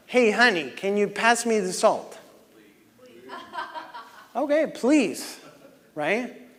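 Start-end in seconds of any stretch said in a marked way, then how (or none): 0.1-2.2 upset, annoyed-sounding tone. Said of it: "You guys heard how I said that".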